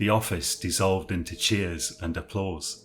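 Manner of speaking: usual speaking voice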